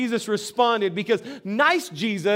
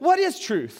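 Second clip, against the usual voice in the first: slightly snarky, acted-out tone; 3 semitones higher than usual. Retelling Pilate's reply to Jesus, mock snarky as Pilate. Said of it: "He's kind of a little bit snarky".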